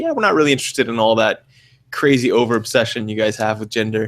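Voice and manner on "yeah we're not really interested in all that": usual speaking voice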